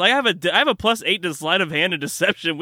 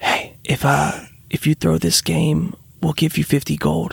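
soft, partly whispered voice; 2 semitones lower than usual. Whispering a bribe into the orc woman's ear: whispering in her ear. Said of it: "kinda whisper in her ear and just be like".

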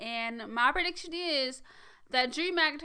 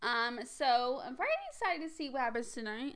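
normal talking voice

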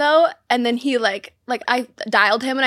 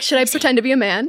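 normal talking voice

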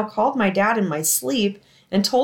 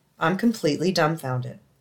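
ordinary delivery

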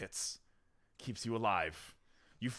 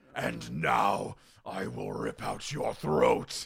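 slow, rough, angry mangy beast voice; 3 semitones lower than usual. Game master voicing a creature that just dodged a javelin, mangy clawed creature voice. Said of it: "And behind you see mangy, gray-haired creatures coming out at you. Long, clawed hands. They wear these strange brass bracelets. They look at you as if they are like, dirty and angry in their eyes".

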